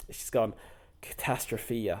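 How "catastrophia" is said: muttering under breath, quieter. Retelling a helper muttering at the taxi rank: imitating muttering under breath. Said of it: "she's muttering under her breath".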